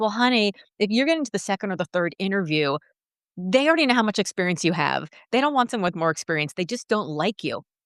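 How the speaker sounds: ordinary delivery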